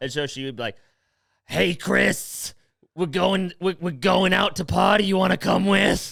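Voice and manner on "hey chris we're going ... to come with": rough, raspy smoker's rasp. Imitating a girl inviting Chris out to party: raspy smoker voice, Long Island accent. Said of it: "she sounded like she'd been smoking two packs a day for forty years".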